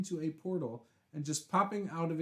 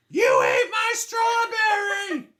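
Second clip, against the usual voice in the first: very high, very loud, shrill, drawn-out swooping scream; 13 dB louder than usual. Reading a chat story aloud, imitating a sister screaming. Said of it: "with a fork screaming".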